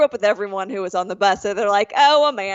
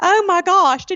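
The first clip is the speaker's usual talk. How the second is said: over-the-top exaggerated Southern drawl; 9 semitones higher, 4 dB louder than usual. Imitating a woman who turns super southern when offended: exaggerated Southern accent. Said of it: "she gets like super southern and like offended".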